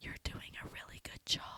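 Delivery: very soft whisper, close to the ear. Retelling a director whispering in the speaker's ear: imitating a whisper. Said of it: "whispers in my ear from behind me".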